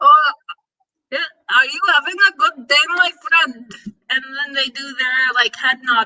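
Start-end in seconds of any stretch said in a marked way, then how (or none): 0.0-3.7 put-on Indian English accent. Speaker imitates how the neighbors greet them, imitating indian neighbors' accent. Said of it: "they sound like this".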